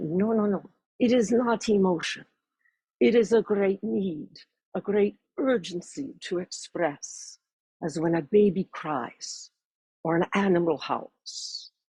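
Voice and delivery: put-on deliberate Russian-accented speech. Retelling her teacher's answer to her question, in Madame Averino's Russian accent. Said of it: "in her wonderful Russian accent".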